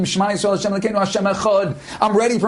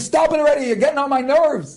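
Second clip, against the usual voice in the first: put-on screaming, pitched high; 6 semitones higher than usual. Retelling an annoyed reply shouted during battle: imitating someone screaming back. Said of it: "I'm screaming back to him".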